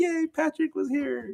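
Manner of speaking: high, slow, gleeful happy cheer. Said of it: "he was like".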